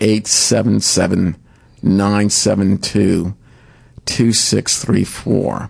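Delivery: slow and measured pace. Giving listeners a foundation's toll-free number, said slowly. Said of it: "which I'll say slowly".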